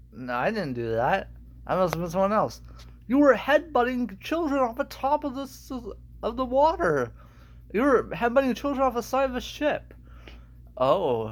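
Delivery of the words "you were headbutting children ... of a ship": appalled, exasperated, fed-up, high llama voice. Acting out a llama scolding Carl in a solo performance, exasperated llama voice. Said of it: "Um, [name]! There's a dead human in our house! / my name is [name]".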